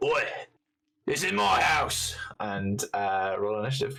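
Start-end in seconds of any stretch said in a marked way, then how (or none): 0.0-2.2 high, put-on orc brute voice. Voicing the orc in front at the gate: put-on orc voice. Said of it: "So the orc in the front goes".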